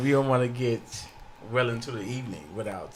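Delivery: put-on, on-air radio announcer delivery. Host urges moving on to the main topic, in his radio voice. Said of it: "He put on his radio voice".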